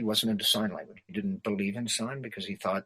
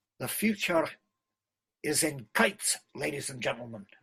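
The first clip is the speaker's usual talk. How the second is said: higher Scottish brogue with rolled r's; 5 semitones higher than usual. Playing Alexander Graham Bell with the brogue creeping in: Alexander Graham Bell with Scottish brogue. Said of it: "let the brogue creep in".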